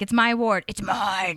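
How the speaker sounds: growled, possessive snarl. Gushing about a favorite dialogue, imitating Leslie growling. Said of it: "She like growls".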